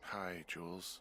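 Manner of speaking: weary, worn-out, tired, sleepy voice. Greeting Jules: tired voice. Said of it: "you sound tired".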